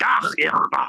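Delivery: imitated Scottish accent. Retelling a cab story, quoting the locals in a Scottish accent. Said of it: "It's still in Scottish, so it's like".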